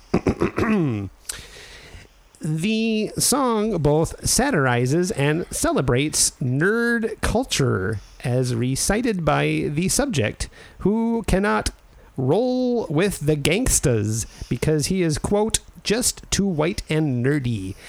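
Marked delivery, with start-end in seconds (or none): 2.4-17.7 high, slow, encyclopedic reading voice. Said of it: "waiting to hear the Wikipedia voice".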